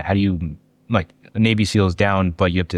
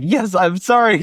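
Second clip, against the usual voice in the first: mock playful child tone, higher; 12 semitones higher, 4 dB louder than usual. Imitating how another speaker said sorry: imitating a playful child tone. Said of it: "like a little playful child".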